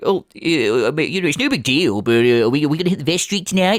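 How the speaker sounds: mocking, sarcastic, scornful put-on voice. Mocking someone who kept asking the same question: mocking imitation of someone. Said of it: "people that sounded just like me and were me".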